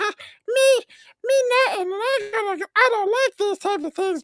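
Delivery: very high character voice. Mimicking how someone will give a net a voice: Elmo voice. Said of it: "he's gonna use his best Elmo voice".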